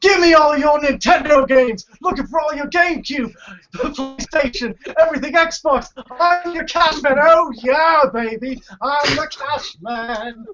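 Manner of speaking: very high, salesy pitchman voice. Doing an imitation of the cash man from a commercial, on request: Russell Oliver impression. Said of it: "do your imitation of that guy".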